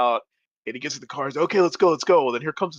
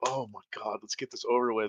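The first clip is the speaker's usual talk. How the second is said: put-on embarrassment, much quieter; 4 semitones lower, 9 dB quieter than usual. Retelling how John reacted when his mom came to the car window: acting out embarrassment. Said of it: "he's so embarrassed".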